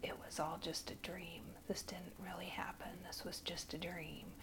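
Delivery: barely audible, rushed whisper under the breath. Retelling what a man lying beside the speaker said: whispering almost under his breath. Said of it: "whispering almost under his breath".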